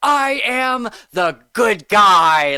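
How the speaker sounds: loud, high, manic, every word drawn out. Imitating an actor's best line delivery: imitating Patrick Dempsey sounding manic. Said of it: "he sounded so manic and so crazy".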